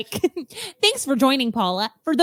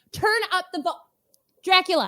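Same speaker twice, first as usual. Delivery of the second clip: mild, pitched-up half-yell; 6 semitones higher than usual. Acting out coworkers on a video call with dracula: imitating people yelling. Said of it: "we're yelling".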